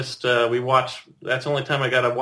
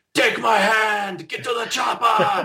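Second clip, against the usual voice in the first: high, drawn-out, slow screaming yell; 10 semitones higher than usual. Retelling a friend screaming out a window at night: imitating Arnold Schwarzenegger screaming. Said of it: "he'd start screaming out the window".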